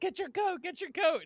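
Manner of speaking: shrill, very high, loud yell. Recapping a sitcom episode, acting out Phoebe yelling at Ross: retelling Phoebe yelling. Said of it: "she's yelling at Ross".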